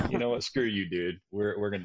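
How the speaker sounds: ordinary delivery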